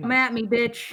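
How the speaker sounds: angry in-character tone. Declaring an in-character line to an enemy at a door: angry in-character taunt. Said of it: "I'm pissed".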